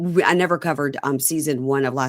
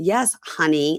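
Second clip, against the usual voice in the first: mock condescending, patronizing tone. Recapping a show, mimicking how a woman says honey: mock-condescending tone. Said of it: "like you're stupid".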